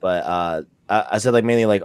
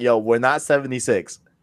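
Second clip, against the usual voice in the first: ordinary talk, nothing marked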